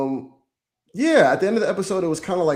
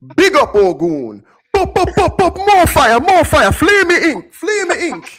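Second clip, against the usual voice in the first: put-on Jamaican accent, higher and louder; 9 dB louder than usual. Imitating a character's lines from the episode: Ogun's Jamaican accent. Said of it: "when he started talking in the Jamaican accent".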